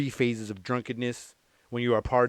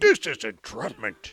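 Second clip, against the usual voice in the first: put-on Scottish accent. Retelling how a show imitated an actor: Sean Connery voice. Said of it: "The Scottish".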